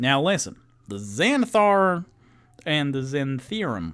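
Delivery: put-on Southern character voice. Speaker tries the exposition as a southern character instead of French; southern character accent. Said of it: "I should have done like a southern character".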